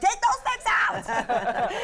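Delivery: drawn-out high yelling. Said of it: "I'm yelling".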